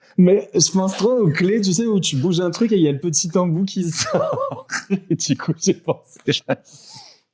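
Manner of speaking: high-pitched, laughing through the words.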